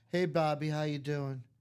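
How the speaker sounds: mock bored, uncaring tone. Imitating a card breaker greeting viewers: imitating an uncaring greeting. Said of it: "You can tell he doesn't care".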